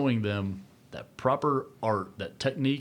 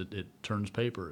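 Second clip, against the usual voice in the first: normal talking voice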